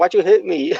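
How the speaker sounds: mock sad, high, tearful sobbing. Retelling a match where she was sad, imitating someone crying. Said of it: "she was sad and she was crying, like".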